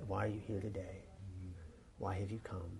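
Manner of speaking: hushed close murmur, very soft, quiet and low. A speaker shows how to greet someone who comes up, leaning in and talking quietly. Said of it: "You have to talk like this".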